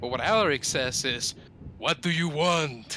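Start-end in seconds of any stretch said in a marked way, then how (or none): 1.8-3.0 light, mild yell. Speaking as Alaric toward a creature in the darkness: very loud booming shout. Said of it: "Very loud".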